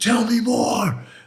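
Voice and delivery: furious, very high-pitched, angry shouting. Speaker reenacts what they said right in someone's face, retelling an angry yell. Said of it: "I got real angry and I yelled at him".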